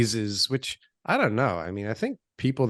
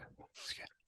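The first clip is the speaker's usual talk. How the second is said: whispered, near-silent. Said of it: "repeating the compliment twice".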